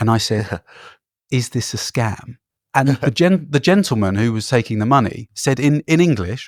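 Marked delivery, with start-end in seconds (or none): 1.3-2.4 soft whisper, much quieter. Retelling turning to a friend after being asked for a donation, soft low whisper. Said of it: "a very soft, low-level whisper".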